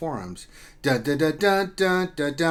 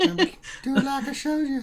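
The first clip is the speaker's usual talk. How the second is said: put-on creepy old man voice, higher; 10 semitones higher than usual. Joking with friends about a creepy character: Herbert from Family Guy voice. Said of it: "It's like Herbert from Family Guy".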